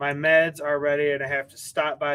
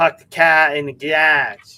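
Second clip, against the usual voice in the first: booming, loud, slow, drawn-out Boston accent; 10 dB louder than usual. Going through regional accents, now showing boston: boston accent. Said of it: "And then you got like Boston".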